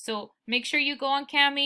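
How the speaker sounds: usual speaking voice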